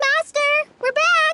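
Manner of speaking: shouting. Calling out to the master on arriving back: shouting. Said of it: "You don't have to shout".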